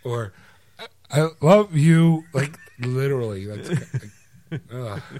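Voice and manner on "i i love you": very loud, high, choppy voice cutting in and out. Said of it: "Sounds like a cell phone going through a tunnel".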